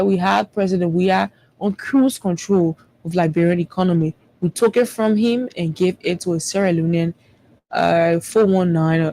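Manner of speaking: ordinary talk, nothing marked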